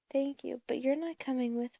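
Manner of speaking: usual speaking voice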